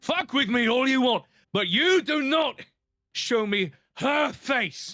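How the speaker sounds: enraged, furious screaming at very high pitch. Speaker acts out a film character turning on a woman, acting out furious screaming. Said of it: "start screaming at her".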